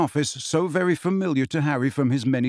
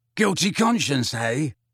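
wheezing, wheezy voice. He answers a boy who just said he didn't do it, wheezing. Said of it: "he wheezed".

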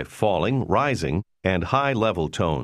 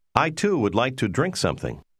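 ordinary delivery

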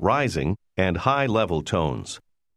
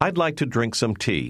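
ordinary talk, nothing marked

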